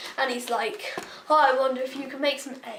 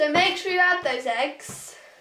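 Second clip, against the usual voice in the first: loud, shouted, yelling voice; 3 semitones higher, 4 dB louder than usual. Reminding viewers to add the eggs while baking: yelling. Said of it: "I'm not so sure why I'm yelling".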